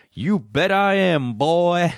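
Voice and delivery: put-on drawling Southern lawman accent. Retelling a Bond movie moment, mimicking the sheriff: J.W. Pepper impression. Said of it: "like that".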